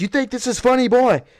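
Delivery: high-pitched, screamed, taunting drill instructor voice. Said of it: "was screaming in his face".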